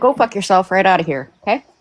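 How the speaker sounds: put-on Minnesota-style Midwestern accent. Telling off a video maker named Dodge: Midwestern accent. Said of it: "You sound so Midwestern when you said it like that".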